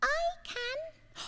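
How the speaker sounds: small, tiny, very high, hushed, soft little voice. Telling a story where a bird answers the eagle: tiny little voice. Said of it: "A tiny little voice said".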